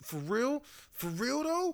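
high-pitched voice spoken through clenched teeth. Retelling a tense scene with Jay: imitating Jay talking through his teeth. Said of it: "when he was just talking through his teeth".

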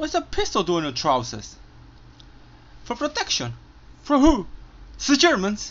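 put-on English accent, very high and swooping. Quoting remembered lines from a film, in a put-on English accent. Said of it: "siempre trato de decirlas con el acento inglés".

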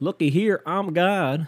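slow, high-pitched Southern drawl. Doing a second take of God being from the South, God with a Southern accent. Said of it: "Take two of God being from the south".

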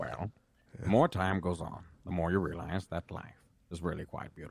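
voice dropped very low, very deep and low-set. Trying an impression of a famous voice: Morgan Freeman voice. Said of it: "Morgan Freeman".

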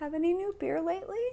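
timid soft voice. Retelling how a coworker in the doorway asked: imitating a timid question. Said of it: "he very timidly says".

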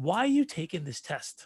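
put-on very broken English accent, spoken slowly. Quoting a woman's question at dinner about his test, broken English accent. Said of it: "She has this very broken English accent".

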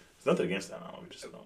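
high, hushed, whispered aside.

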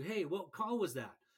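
normal talking voice

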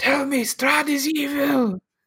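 crying, very high-pitched tearful shout. Game master voicing Irina during the fight, shouting through tears. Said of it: "through tears at this point, is shouting".

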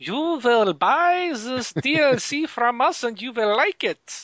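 put-on German accent, pitched very high. After joking about being made to buy the game, a German accent. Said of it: "I don't know why I just did a German accent".

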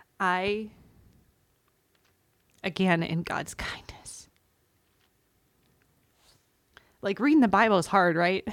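holding back tears. Sharing a personal story, the speaker keeps talking while trying not to cry. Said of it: "Sorry, I'm trying not to cry".

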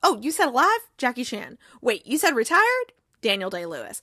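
plain

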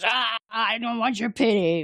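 slow, play-acted violent growling fury. Retelling a character refusing pity while shaking the shuttle: imitating angry violent character. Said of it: "Very angry and violent".

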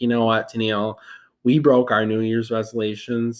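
ordinary talk

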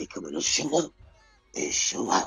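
hushed, breathy whisper in a put-on voice. Talking about the Mafia coming to your hometown, switch into your Stephen A. voice. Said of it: "In my Stephen A. voice".

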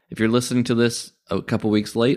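ordinary delivery

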